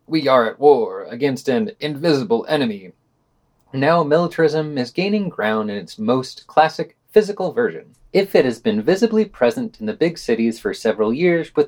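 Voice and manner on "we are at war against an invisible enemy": usual speaking voice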